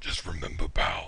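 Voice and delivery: hushed, breathy villain growl under the breath. Storyteller in a tabletop game voicing a character's line again: growling Dr. Claw voice. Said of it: "He growls".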